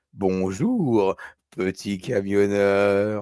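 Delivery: creepy, sleazy, leering lecherous voice. Recalling what a child's talking toy fire truck said, creepy pervert voice. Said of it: "Avec une voix de pervers sexuel".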